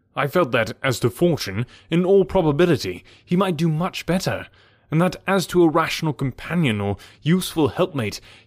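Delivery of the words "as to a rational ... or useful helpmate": ordinary delivery, nothing marked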